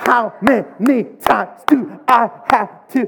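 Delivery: slow, loud, high exasperated scolding voice.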